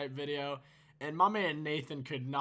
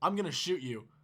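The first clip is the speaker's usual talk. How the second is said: mock, suddenly grave, dead serious tone. Retelling a friend threatening after a cracker was thrown: imitating someone getting serious. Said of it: "he gets all serious".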